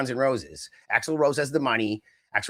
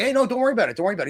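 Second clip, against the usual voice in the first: fake-friendly, pitched-up, two-faced reassuring voice; 8 semitones higher than usual. Retelling a scene from the movie Scrooged: Bill Murray in Scrooged. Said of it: "what's that Bill Murray movie, Scrooged?".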